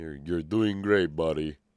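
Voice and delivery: sarcastic delivery. Showing the line said to guys at work: imitating own sarcastic praise. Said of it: "It's kind of sarcastic".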